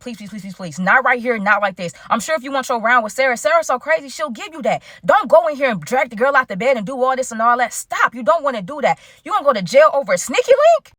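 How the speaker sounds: usual speaking voice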